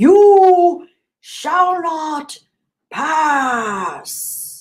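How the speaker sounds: very slow, booming wizard voice. Reading chat, then trying a Gandalf impression. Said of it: "Is that a good Gandalf impression".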